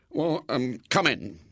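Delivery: nervous, anxious. A man invites the boy William inside, nervous. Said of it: "said the man nervously".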